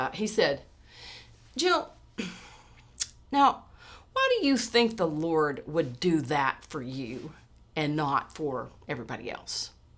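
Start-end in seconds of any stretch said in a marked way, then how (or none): 1.6-9.7 acted skeptical, doubting, probing tone. Retelling a youth member's question about her story: imitating a skeptical tone. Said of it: "very s-, skeptically".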